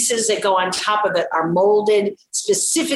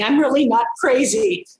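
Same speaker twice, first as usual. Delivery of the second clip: mock weepy, tearful sobbing voice; 4 semitones higher than usual. Speaker re-enacts begging a man in his living room, imitating herself crying. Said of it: "Inside his living room crying".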